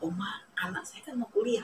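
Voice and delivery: soft, gentle, hushed whispered plea.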